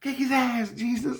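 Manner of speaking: very high, frantic cheering voice. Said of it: "all I hear is my innocence say".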